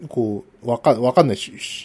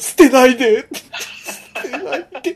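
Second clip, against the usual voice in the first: mock crying, fake tearful begging, pitched higher; 13 semitones higher than usual. Imagining being left by a wife, begging her while crying: mock crying while pleading. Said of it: "泣きながら".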